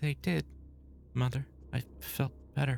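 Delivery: low, soft mumble. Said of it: "Well, don't you just mumble".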